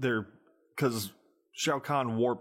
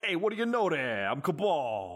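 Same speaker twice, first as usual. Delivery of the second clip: high, swooping cartoon wiseguy mobster voice; 5 semitones higher than usual. Mocking how the movie's Cabal sounded: imitating a cartoon mobster voice. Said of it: "He sounded like a cartoon mobster".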